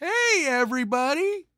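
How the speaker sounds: very high, squeezed, cartoonish sitcom-style voice. Copying the other speaker's goodbye: imitating a guy off The Simpsons. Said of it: "You sound like that guy off The Simpsons".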